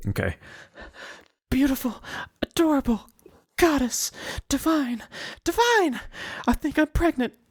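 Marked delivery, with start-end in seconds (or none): 1.5-7.3 very high-pitched put-on woman's voice. Perform a line for someone giving you directions, umbrella in hand, in a high-pitched woman voice. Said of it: "like high pitched woman voice".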